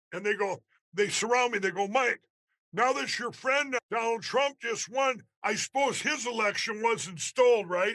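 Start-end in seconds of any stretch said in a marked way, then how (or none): 1.8-7.9 play-acted, snide, knowing, needling, sarcastic tone. Retelling how a reporter questioned him, mocking her sarcastic question. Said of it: "said it sarcastically".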